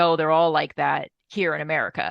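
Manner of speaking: ordinary delivery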